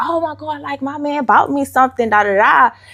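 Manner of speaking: put-on, bubbly, high, gushing excitement. Retelling own reaction when given a gift: imitating own bubbly self.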